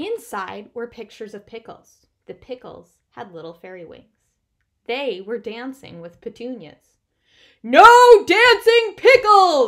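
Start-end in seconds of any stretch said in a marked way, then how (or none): 7.6-9.7 booming, very loud, high-pitched roar. In a library, a bear objects to a book he is looking at: roaring. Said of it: "Bear roared".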